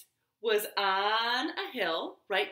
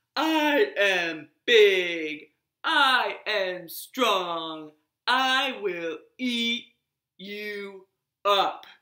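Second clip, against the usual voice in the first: big loud put-on deep voice, very slow, drawn out; 2 semitones lower, 6 dB louder than usual. Reading a story aloud, Caterpillar calls out from Rabbit's house to Leopard; big fake deep voice. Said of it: "called out in his big, fake, deep voice".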